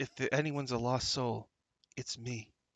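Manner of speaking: whispering in a put-on voice. Voicing a cloaked figure speaking to a companion: whispering in character. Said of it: "whispers to you from under his cowl".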